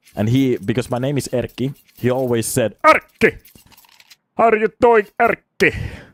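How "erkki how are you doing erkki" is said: put-on very high, loud, thick Cuban accent. Retelling how a Cuban friend always greeted Erkki, in Ernesto's thick accent. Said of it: "he had a very thick accent".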